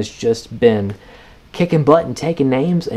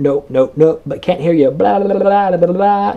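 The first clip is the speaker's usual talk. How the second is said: loud, high, mock dismissive la-la-la. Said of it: "Don't be like".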